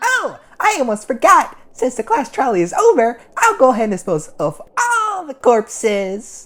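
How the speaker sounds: very high-pitched, swooping cartoon bear voice. Recalling what Monokuma told the group after the class trial, Monokuma voice. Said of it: "It's been a while since I've been able to do your voice".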